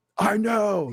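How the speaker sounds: put-on high, angry child voice with attitude. Retelling how the son answers when told to get dressed: imitating an angry son with attitude. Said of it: "He gets all angry, like, all attitude".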